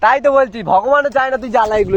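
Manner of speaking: shouting.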